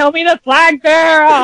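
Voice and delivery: exasperated scream, very high pitched. Retelling what they screamed when Madagascar walked in: retelling a scream. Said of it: "I'm just screaming at the".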